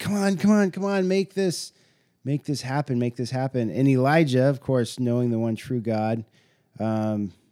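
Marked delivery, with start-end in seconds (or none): 0.0-3.7 mock, high, frantic, desperate begging cry. Retelling the prophets begging for fire: imitating desperate crying out. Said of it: "crying out with all that they've got".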